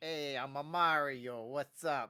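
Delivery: put-on dark, very slow New York Italian accent. Describing how he sounded in the American cartoon, doing a Mario voice, New York Italian. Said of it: "like a New York Italian".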